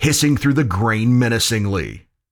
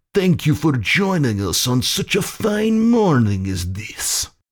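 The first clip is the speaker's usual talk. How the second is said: put-on Russian-accented voice; 4 semitones higher than usual. A narrator voices a Russian officer addressing Captain McCreary's group, in an accented voice. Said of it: "an accented voice said".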